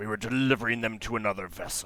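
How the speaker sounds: spoken through gritted, clenched teeth. A game master voices a hateful captive answering the players, through clenched teeth. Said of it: "he says through uh, clenched teeth".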